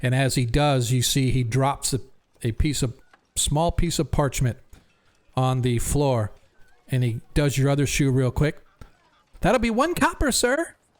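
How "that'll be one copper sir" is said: put-on very high-pitched little kid voice. A game narrator voices a shoe polisher asking a player for payment, high-pitched childlike voice. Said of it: "he says in a high-pitched, childlike voice".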